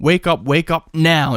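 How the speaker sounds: mock aggressive, urgent, half-shouted mild shout. Retelling a warning voice that woke someone at a party: retelling a shouted warning.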